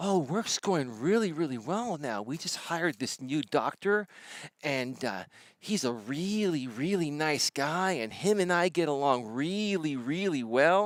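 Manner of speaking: sounds thrilled with everything, excited and eager. Recounting a phone call with her about work, imitating her excited tone. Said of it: "she sounded so excited".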